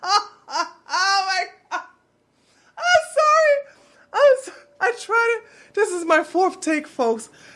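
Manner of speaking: talking through giggles. Apologizing for a botched take while reading a statement, laughing while talking. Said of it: "I can't say this without laughing".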